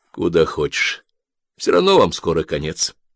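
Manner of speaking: ordinary delivery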